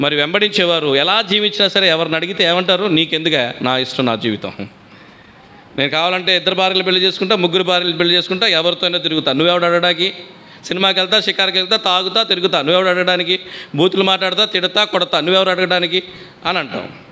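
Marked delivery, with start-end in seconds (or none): none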